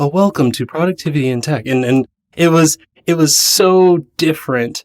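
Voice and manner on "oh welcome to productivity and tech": polished public radio host announcer delivery. Recalling speaking close to the mic for an intro: NPR voice. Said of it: "I even put on my best N P R voice".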